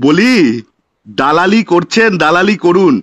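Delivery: low, slow, sneering, jabbing tone.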